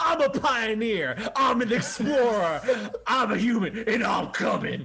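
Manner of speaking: screaming battle cry. Voicing a character charging into battle who screams out: screaming battle cry. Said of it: "who just screams out".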